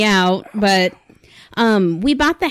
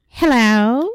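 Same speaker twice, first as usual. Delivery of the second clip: put-on strange, creepy old-woman voice. Telling of hearing a voice beside them, the speaker mimics it; imitating a mysterious voice. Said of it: "It sounded just like that".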